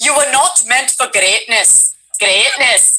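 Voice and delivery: put-on intended Indian accent slipping into Scottish, rolled r. Describing trying a character voice, the speaker ends up with an accidental Scottish-sounding accent. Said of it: "I sound Scottish because I go".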